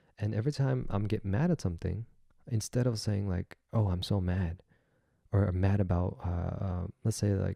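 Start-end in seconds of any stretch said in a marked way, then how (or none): none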